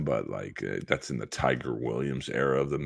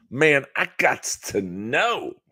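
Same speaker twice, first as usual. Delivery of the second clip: over-the-top, high, drawn-out, exaggerated vernacular voice; 12 semitones higher than usual. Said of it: "in the blackest voice he could muster".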